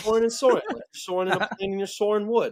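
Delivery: put-on heavy New York accent. Retelling what a man said about tricky English words: thick New York accent. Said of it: "He uh he's a thick like thick New York accent".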